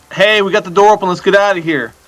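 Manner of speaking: calling out loudly in a character voice. In a tabletop game, a player's character calls to Tab and Lyr; yelling in character. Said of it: "I'm gonna yell to Tab and Lyr".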